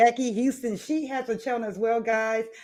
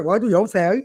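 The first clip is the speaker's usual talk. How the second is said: put-on English accent, lower and louder; 4 semitones lower, 5 dB louder than usual. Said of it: "She adopted the English accent".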